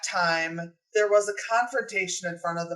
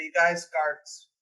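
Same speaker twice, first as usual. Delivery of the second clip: quiet, hushed, low-key voice. Spotting guards nearby, a character alerts the others, quiet warning. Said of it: "kind of quietly say".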